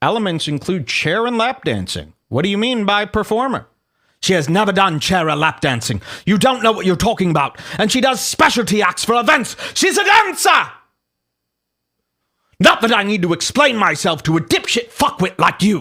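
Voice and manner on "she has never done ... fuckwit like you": put-on British accent. Reading an online exchange aloud, voicing Jack Buckby in a British voice. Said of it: "I'm going to read Buckby's voice in a British voice".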